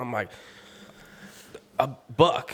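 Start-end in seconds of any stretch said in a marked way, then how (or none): 1.8-2.6 panting, high, breathless stuttered blurt. Retelling a call after shooting a buck, imitating stuttering and panting. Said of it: "stuttering and, like, panting".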